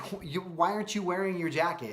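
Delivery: high, sarcastic tone after a false start. Retelling a question once asked of a daughter in the car: imitating own sarcastic tone. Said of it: "I immediately jump into sarcasm mode".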